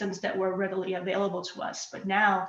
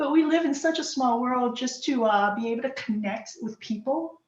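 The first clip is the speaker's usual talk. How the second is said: voice catching with emotion, teary and choked up; 4 semitones higher than usual. Recalling lifting babies into a helicopter years ago: teary-eyed. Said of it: "I'm just getting teary eyed just feeling that".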